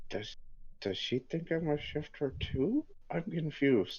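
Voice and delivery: hushed whisper. Leaning over to a companion during the game: whispering. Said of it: "lean over and whisper to Red Bear".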